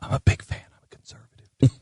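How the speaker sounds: hushed, secretive whisper. Retelling what a man whispered to him after looking around: retelling a whisper. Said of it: "with that tone of voice".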